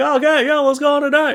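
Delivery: high, loud, eager tone. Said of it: "you're like".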